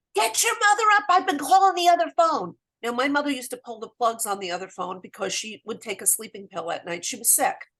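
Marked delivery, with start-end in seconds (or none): 0.1-2.5 very high-pitched, loud screaming. Retelling a late-night phone call from a brother: imitating someone screaming. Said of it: "And he's screaming".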